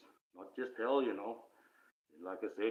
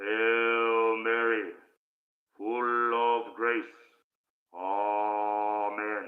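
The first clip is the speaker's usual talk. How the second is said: ominous, menacing tone, much louder; 9 dB louder than usual. Speaker rereads the prayer to avoid a mistake, ominous voice. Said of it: "Makes it a bit more ominous".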